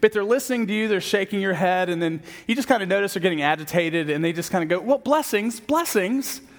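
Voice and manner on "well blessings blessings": bright, chirpy, polite, peppy, pitched-up voice. Imitating someone politely ending a conversation, mimicking a peppy higher voice. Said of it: "Usually with a higher pitched voice, a little peppiness in it".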